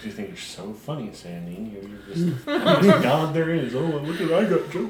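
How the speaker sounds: soft mumbling, muttered under the breath. Voicing a character walking off into the woods: mumbling. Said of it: "woods mumbling".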